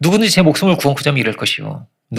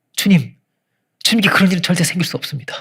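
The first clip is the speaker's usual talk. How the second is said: mock warm, slow, comforting tone; 4 semitones higher than usual. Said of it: "정말 따뜻하게 말합니다. 따뜻하게".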